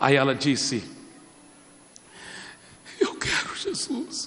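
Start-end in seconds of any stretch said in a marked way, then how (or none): 3.0-4.3 high, whispered, sobbing, pleading voice. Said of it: "ela começou a chorar, chorar, chorar".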